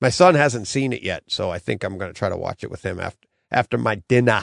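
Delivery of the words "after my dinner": put-on Boston-style accent. Talking about watching it with his son, speaker puts on a Boston accent. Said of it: "My Boston accent there for you".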